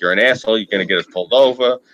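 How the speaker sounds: mock annoyed, angry, scolding complaining tone. Retelling his wife scolding him while he drives, imitating an angry wife. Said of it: "My wife's all pissed off at me".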